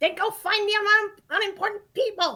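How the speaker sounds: very loud, very high, drawn-out yelling. Playing a character who tells someone to go find unimportant people: yelling in character. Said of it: "You didn't have to yell at me like that".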